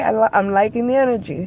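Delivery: normal talking voice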